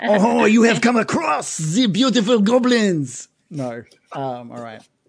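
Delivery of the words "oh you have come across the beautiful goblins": very loud, high, bad French accent. Addressing the group during a game, in a french accent. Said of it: "they're beautiful when I'm French".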